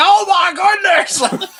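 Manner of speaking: excited announcer shout, very high and loud. Retelling a moviegoer's reaction to a movie fight: Jim Ross impression. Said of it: "a spot-on Jim Ross impression".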